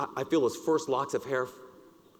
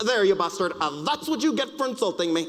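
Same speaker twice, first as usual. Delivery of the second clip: loud, high-pitched, put-on fake Italian accent; 7 semitones higher, 5 dB louder than usual. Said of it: "that fake Italian accent".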